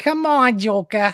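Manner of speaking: put-on thick Brooklyn accent, high, loud, swinging pitch. Discussing Harley Quinn's voice, the speaker tries a Harley Quinn Brooklyn accent. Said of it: "thick kind of New England accent, New Jer- Brooklyn accent".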